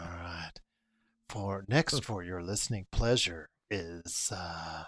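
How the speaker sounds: seductive, very deep, very soft, hushed sultry voice. Told by a co-speaker to sound sultry, introducing the next item in a sultry voice. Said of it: "I just have to talk to you in this voice because you said sultry".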